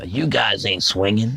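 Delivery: put-on slow, seasoned old jazzman talk. Retelling how a teenage classmate talked: imitating Kenny talking like an old jazz guy. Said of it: "he talked like an old jazz guy".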